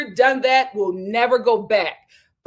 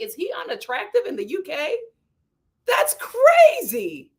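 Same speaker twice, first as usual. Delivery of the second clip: imitated screaming with higher pitch; 4 semitones higher than usual. Retelling a reaction while watching a reality show: imitating own screaming at the tv. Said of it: "I was screaming at my T V like".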